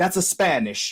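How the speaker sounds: high, fired-up, heated, irate anger, acted out. Retelling how locals reacted to Spanish: imitating an angry Italian. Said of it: "They were fired up".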